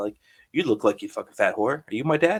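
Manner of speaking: acted deadpan delivery. Recalling teenage antics with friends, speaker acts out a deadpan delivery. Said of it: "like going up to people like deadpan face".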